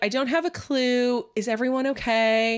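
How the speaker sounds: put-on high-pitched innocent baby voice. Retelling a woman's answer while questioned by a detective, mock-innocent babyish voice. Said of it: "trying to sound innocent and babyish almost".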